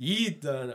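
put-on high-pitched Jamaican accent slipping out. Imitating another speaker's words, Jamaican accent. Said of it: "your Jamaican accent just came out then".

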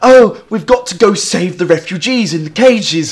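badly acted put-on London accent. Mocking a girl in a BBC Three trailer who sounds unlike a Londoner: bad acted London accent. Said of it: "sounds like she don't live in London".

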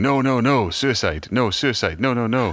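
mock high, drawn-out farmer screaming. Retelling how a farmer ran out warning about avalanches: imitating a farmer screaming. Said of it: "a farmer ran out of his house in the morning screaming".

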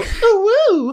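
very high giggling squeal and coo. Voicing Octi reacting to a chokehold attempt: giggling as Octi. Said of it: "just kind of giggle and go".

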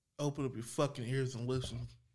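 very low-pitched, very hushed, restrained menacing voice. Told to show how the line is done, demonstrating it: restrained threatening delivery. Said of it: "You can't go full on in the threat mode".

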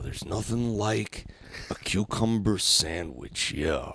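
calm wrestling-promo delivery. Trading lines with another speaker in a relaxed joke bit: calm Macho Man impression. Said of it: "A calm Macho Man".

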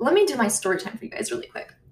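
fast, excited, rambling speech.

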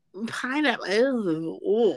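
sniffy, disdainful, condescending, disgusted ew of revulsion. Reacting to the idea of mushroom with pineapple: condescending disgust. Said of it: "I hear the condescension in your voice".

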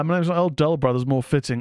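ordinary talk

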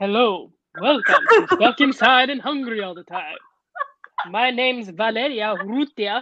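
Spanish television host presenter voice. Trying out a host intro for the podcast, Telemundo presenter voice. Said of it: "Just use my Telemundo voice, but in English".

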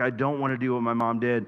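put-on pleading tone. Recalling what a woman said to him on walks together, imitating someone pleading. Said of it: "and just pleading".

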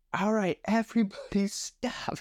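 loud high-pitched calling out.

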